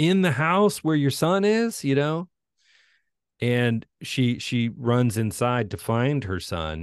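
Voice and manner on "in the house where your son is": mock screaming, higher. Retelling a film scene where a wife confronts her husband: imitating screaming. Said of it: "she's screaming at him".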